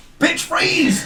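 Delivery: very high, shrill, intimidating shout. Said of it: "so what do you yell?".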